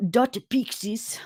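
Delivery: pronounced with Japanese accent. Saying a character's name aloud: Japanese accent. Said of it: "I gotta say it with a Japanese accent".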